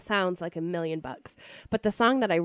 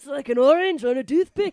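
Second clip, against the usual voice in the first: loud, high, bad put-on Scottish accent; 8 semitones higher, 7 dB louder than usual. Quoting a line from a favorite comedy movie, in a bad Mike Myers accent attempt. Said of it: "I can't either, but it's fun to try".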